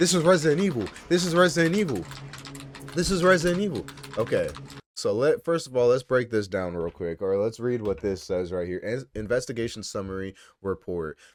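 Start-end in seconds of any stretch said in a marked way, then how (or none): 0.0-3.8 shrill, very high, excited screaming. Retelling the moment the first trailer dropped: imitating own screaming. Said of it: "I was literally screaming".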